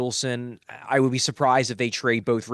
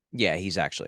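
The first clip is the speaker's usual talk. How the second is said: totally straight-faced, deadpan, low voice; 6 semitones lower, 5 dB quieter than usual. Answering whether a player is actually hurt: deadpan delivery. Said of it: "Deadpans it. No sells it whatsoever".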